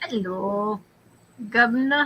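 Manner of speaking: fake, put-on British English accent. Greeting someone playfully: put-on English accent. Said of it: "talking with an English accent today".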